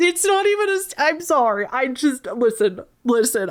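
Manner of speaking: high, tearful, halting speech, crying through words. Speaker telling a pregnancy story breaks off, crying while talking. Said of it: "And so that's why I'm crying".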